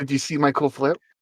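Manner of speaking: hushed half-whisper under the breath. Asking another player in character about a flip: half-whispering. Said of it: "then I whisper".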